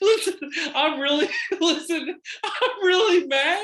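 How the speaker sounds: shrill, very loud, high speech through laughter. Scolding the other speaker for getting hurt again: laughing while talking. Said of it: "but I can't stop laughing".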